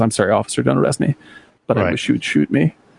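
mock-meek voice, suddenly timid. Retelling a film scene where a woman apologizes to an officer: imitating a meek apology. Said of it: "suddenly like retreats and says".

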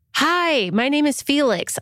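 put-on slow voice of a nine-year-old boy. Reading a listener letter from Felix aloud, in Felix's 9-year-old boy voice. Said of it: "I'm doing a 9-year-old boy voice".

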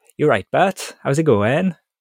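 put-on cartoon Welsh accent, pitched high. Asked for a Scottish accent, offering the only one they can do: Welshy from Futurama accent. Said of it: "The only accent I can do is Welshy from Futurama".

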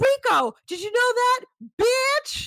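very high, rising, drawn-out yell. Retelling an argument, imitating someone yelling. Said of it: "she starts yelling".

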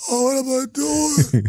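mock crying voice. Retelling a first night alone in a snowy hotel: imitating own past crying. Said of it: "I was sitting there literally crying, going".

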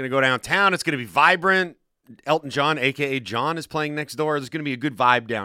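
ordinary talk

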